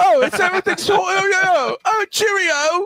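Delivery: put-on very high-pitched, plummy, posh British accent. Making fun of how Joe walks around, you do a mock British Geico gecko voice. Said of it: "Why do rich folks have to be British?".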